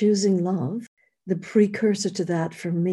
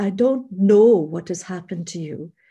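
put-on Austrian accent in English; 4 dB louder than usual. The speaker quotes a woman who phoned two weeks later; imitating an austrian accent. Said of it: "she has this Austrian voice".

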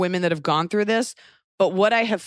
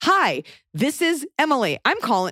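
put-on beaten-down, mock-robotic voice, higher and slower; 2 semitones higher than usual. Mimicking a woman calling from a doctor's office, imitating a beaten-down receptionist. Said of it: "They all just sound like kind of beaten down".

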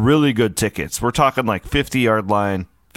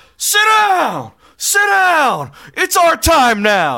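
mock very high, swooping, loud screaming outburst; 5 dB louder than usual. Retelling buddy Ryan standing up among Nebraska fans, imitating Ryan screaming. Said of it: "just starts screaming".

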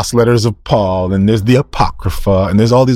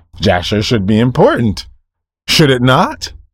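sarcastic, swooping sing-song tone. Asking why books named in scripture are missing, sounding sarcastic. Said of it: "I'm sorry if I sound sarcastic".

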